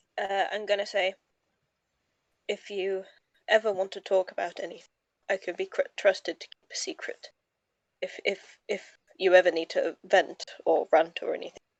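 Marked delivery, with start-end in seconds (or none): 2.5-11.6 confiding private voice, stumbling over words. A player's character speaks privately to a companion in Draconic, in a quiet voice. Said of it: "so just in a quiet voice to him".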